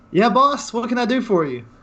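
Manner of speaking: excited, cheerful voice. Voicing an excited, happy elf who greets the boss: excited, happy elf. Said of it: "he just looks real excited, real happy".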